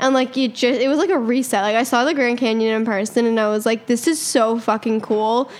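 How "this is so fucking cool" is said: ordinary talk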